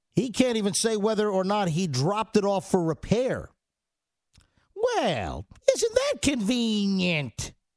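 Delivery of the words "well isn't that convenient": prim, drawn out, with slow swooping pitch. Mocking a squirrely answer about a laptop, the speaker tries a Church Lady voice. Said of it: "In my best attempt at the church lady voice".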